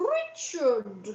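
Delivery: name called up high. Explaining a habit taken from a sitcom, the speaker calls out like Hyacinth calling Richard. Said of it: "is always saying, Richard! So when anybody's called Richard, I say it like that".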